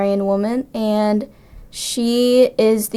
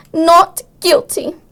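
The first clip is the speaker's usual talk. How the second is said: put-on Hungarian accent with pitch raised; 8 semitones higher, 4 dB louder than usual. Asked to perform the role's line for an interviewer: Hungarian accent as Hunyak. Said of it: "can you do that with your Hungarian accent for us".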